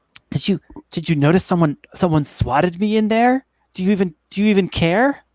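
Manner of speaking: small, weak, feeble high-pitched voice. Voicing a character's conscience as she is leaving: weak little voice. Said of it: "in like a, a weak little voice".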